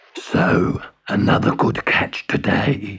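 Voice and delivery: beastly, growling sea-monster voice. Narrating a story, voicing a scaly sea creature hauling in his net, growled. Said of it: "he growled".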